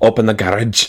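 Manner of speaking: playful put-on Scottish accent. Speaker retells what they said pulling up to the house last night, scottish accent. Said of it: "what are you, Scottish now?".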